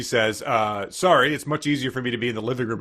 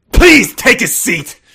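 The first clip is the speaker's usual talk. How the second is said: put-on bitter movie hero voice, higher and louder; 11 semitones higher, 13 dB louder than usual. Asking someone to sit down: Charlton Heston voice. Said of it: "full Charlton Heston there".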